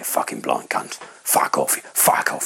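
quiet whisper spoken right at the ear. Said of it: "this quiet voice pretty close to me".

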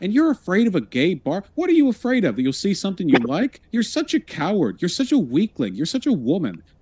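high-pitched, riled-up, worked-up tirade. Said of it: "Just got real worked up on that one".

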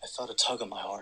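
normal talking voice

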